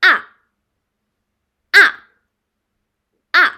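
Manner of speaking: ah with sharp, hard falling fourth tone. Demonstrating the last Chinese tone for learners, sharply spoken ah.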